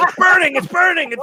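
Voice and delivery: mock screaming. Recounting a frantic cooking game, acting out the shrieks when food catches fire. imitating a scream. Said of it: "She's yelling".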